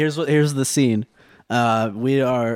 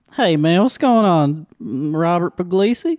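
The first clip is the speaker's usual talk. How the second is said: put-on Southern accent, much higher, louder; 5 semitones higher, 3 dB louder than usual. Showing another speaker the easiest accent to try, in a southern accent. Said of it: "Southern accent".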